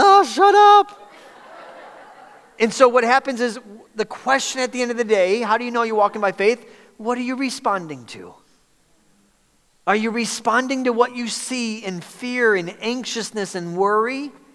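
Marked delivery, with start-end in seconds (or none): 0.0-1.1 very high, loud, slow, fed-up exasperated groan. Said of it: "and then you're like".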